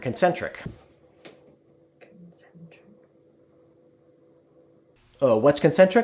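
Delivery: a second voice chiming in, small aside. Speaker voicing an imagined question about the chuck adapter, quietly.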